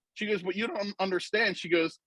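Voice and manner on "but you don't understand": plain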